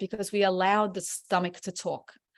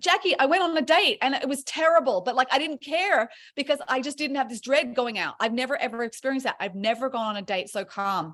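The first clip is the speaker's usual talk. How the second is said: mock, high, excited gushing, bubbling over; 5 semitones higher than usual. Retelling a course member's report about a date: imitating someone excited. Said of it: "all excited".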